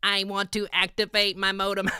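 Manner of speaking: monotone, flat, high robotic voice. Retelling what they said to an AI system, robot voice. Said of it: "You got to sound like a robot".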